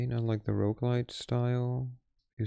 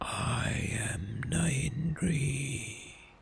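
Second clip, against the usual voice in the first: hoarse, raspy demonic voice; 3 semitones higher than usual. Narrating a story, reading the demon's reply from the dark, in a hoarse Nahindri voice. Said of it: "you hear a hoarse voice".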